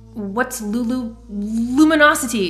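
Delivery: stammering with frustration. Jem asks Master Crew about a word he doesn't know, stuttering, frustrated. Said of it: "Jem stuttered, frustrated again".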